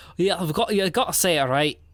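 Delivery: bad Irish accent that slides into Scottish. Quoting a movie character's line: irish accent sounding scottish. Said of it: "That was more Scottish than it was Irish".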